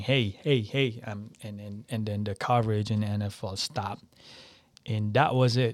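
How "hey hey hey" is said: ordinary delivery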